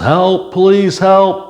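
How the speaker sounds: high, loud, drawn-out yell. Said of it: "she yells".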